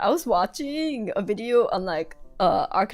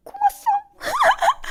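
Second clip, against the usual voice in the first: super high-pitched, squeaky voice; 4 dB louder than usual. Retelling how a voice line says a name: imitating a super high pitch voice. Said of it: "super high pitch voice".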